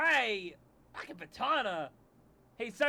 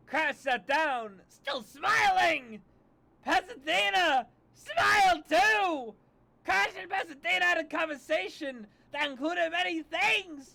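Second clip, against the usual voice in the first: increasingly deranged, loud and slow; 6 semitones higher, 3 dB louder than usual. Reading aloud a story that keeps mentioning smiling, increasingly deranged. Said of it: "more and more deranged every time you say smile".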